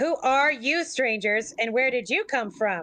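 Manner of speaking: clumsy, poor, fake American accent. Retelling a man's reply to a woman's question about strangers, bad American accent. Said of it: "with a bad American accent".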